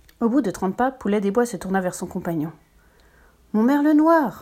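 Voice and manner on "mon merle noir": high, begging, imploring, pleading tone. Poulet des Bois turns to his companion the blackbird, pleading tone. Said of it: "dit-il d'un ton suppliant".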